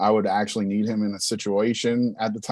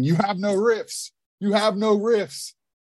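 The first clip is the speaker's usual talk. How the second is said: mock very high screaming, repeated over and over; 11 semitones higher than usual. Retelling a band practice where the drummer screamed at the guitarist: imitating Jamie screaming. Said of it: "just screaming".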